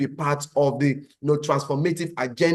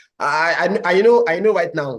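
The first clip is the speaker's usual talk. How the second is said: plain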